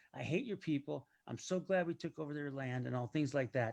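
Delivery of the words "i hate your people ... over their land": put-on frustrated, ranting voice. Retelling a long exchange over a name, imitating a frustrated person.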